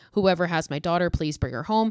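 plain

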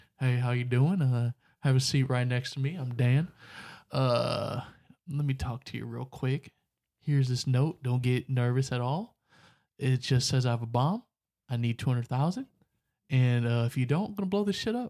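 cool, slick delivery. Acting out a hijacker handing over a bomb note: imitating a suave hijacker. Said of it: "Dan got on there suave with his shades on".

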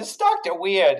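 imitated New York accent. Retelling a man's reply about the movie's name, in a put-on New York accent. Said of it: "sounds like he almost has like a New York accent".

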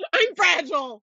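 play-acted, loud, high-pitched yell. Reading an all-caps message aloud, the speaker is yelling. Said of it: "in all caps".

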